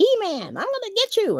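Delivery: cartoonish voice pitched very high. Recalling old He-Man cartoons: imitating cartoon voices. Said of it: "the cartoon voices".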